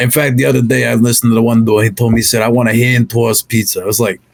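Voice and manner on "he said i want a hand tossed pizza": put-on Brooklyn accent. Speaker retelling what someone told them, in a put-on Brooklyn accent. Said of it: "the Brooklyn accent".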